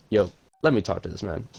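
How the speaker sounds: plain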